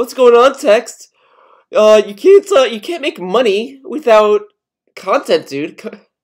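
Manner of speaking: silly, taunting, mocking, high, loud tone. Quoting how he spoke to Text, imitating his mocking tone. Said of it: "He kind of says it in a mocking tone".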